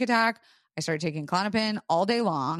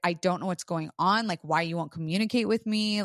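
mock-tearful, put-on crying, faster. Recounting a morning talk with someone who won't communicate: retelling her own crying. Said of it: "I'm like crying and I'm just like".

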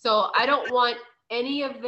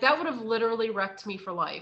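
ordinary talk, nothing marked

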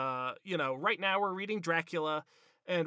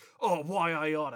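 put-on fantasy-movie accent in usual cadence. Imitating how Sam always talks in the movies: Sam's movie accent. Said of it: "where he's always going like".

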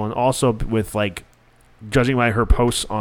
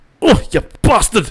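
put-on thick Scottish accent, much higher and louder; 10 semitones higher, 6 dB louder than usual. Quoting a favorite show character's outburst, in Groundskeeper Willie's thick Scottish accent. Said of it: "because the Scottish accent's too thick".

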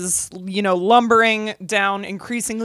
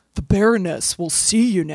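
laid-back put-on actor voice; 2 semitones lower than usual. Voicing an oily character who greets the party in a Keanu Reeves voice. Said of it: "he talks like Keanu Reeves".

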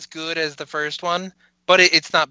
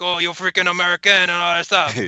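bad put-on French-Canadian accent; 3 semitones higher than usual. Discussing a wrestler, quoting him: bad French-Canadian Mountie impression. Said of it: "stereotypical bad, like, you know, French-Canadian kind of accent".

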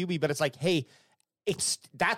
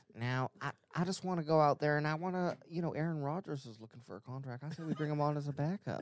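put-on rambling, meandering older man voice; 8 dB quieter than usual. Doing an impression of Jerry Jones after being asked: Jerry Jones impression. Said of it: "[name], give us your Jerry".

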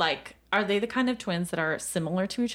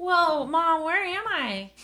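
put-on high, very slow child voice; 9 semitones higher than usual. Voicing a newly appeared child calling for mom: child character voice. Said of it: "are you gonna do a voice for all of the kids?".

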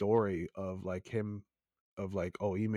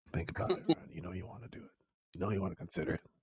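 low, breathy, whispered, coaxing, persuasive murmur; 4 dB quieter than usual. Mimicking another speaker pressing ryan about a proposal: imitating a low convincing voice. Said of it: "Don't talk to me in that low voice".

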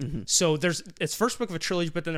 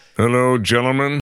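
booming, very loud divine voice; 5 semitones lower, 11 dB louder than usual. Greeting the hosts as a special guest: godly voice. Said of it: "It's a godly voice".

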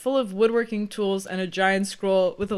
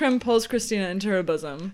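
ordinary delivery, nothing marked

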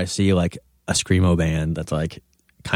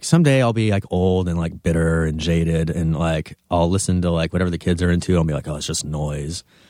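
ordinary delivery

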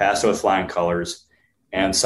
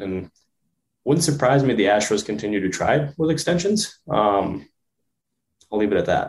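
sentimental, emotional voice breaking and cracking. Speaker wraps up a point, voice cracking with emotion. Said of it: "Did your voice just crack and get emotional".

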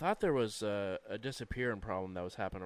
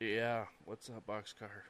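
very groggy, just-woken, barely awake voice; 4 dB quieter than usual. The conductor answers Boxcar, in a very groggy tone. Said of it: "they answer in a very groggy tone".

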